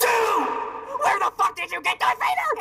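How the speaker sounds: furious yelling. A character handed a present shouts at the giver, angry shouting. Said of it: "why are you shouting at me?".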